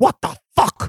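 mock furious, pissed-off outburst, very high pitched. Retelling how Stanley Kubrick ran Shelley Duvall down: imitating Stanley Kubrick angry.

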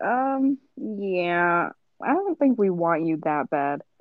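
slow, drawn-out delivery. Imagining colleges hearing the recording and turning her down: imitating a college. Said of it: "They'll be like".

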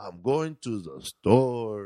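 slow put-on Mexican accent, each word falling in pitch. Explaining how he had to read a line, showing it: Mexican accent, dropping each word. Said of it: "when you do the Mexican accent".

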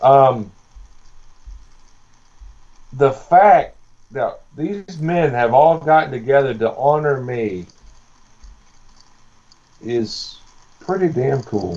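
slow, emotional, choked-up voice holding back tears. Thanking the wrestlers honoring him at his final show, choked up. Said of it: "I don't know if I can say this without getting choked up".

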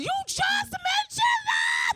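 very high-pitched, very loud furious screaming. Retelling how she screamed at him when he wanted food, retelling a scream. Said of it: "Like literally just like screamed at him".

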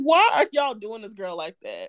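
plain

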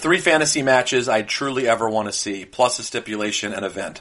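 plain

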